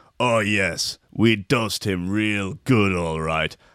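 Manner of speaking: slow wook voice with words dragged out. Voicing the Wook boasting about dosing someone: voicing the Wook. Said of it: "The Wook says".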